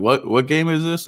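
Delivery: put-on, dripping, eye-rolling sarcasm. Quoting a friend's line about a baseball game: imitating Jerry being sarcastic. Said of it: "being sarcastic".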